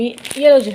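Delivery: calling out.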